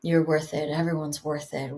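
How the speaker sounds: low, flat, low-energy monotone with no energy at all. Imitating Alia talking in a makeup ad: monotone Alia imitation. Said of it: "It's a little monotone".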